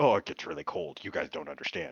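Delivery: exaggerated, theatrical, overdramatic grumbling. Redoing an imitation of Smalls complaining about the cold: imitating Smalls being dramatic. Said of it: "I didn't do that voice right".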